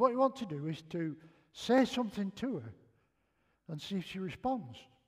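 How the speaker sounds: ordinary talk, nothing marked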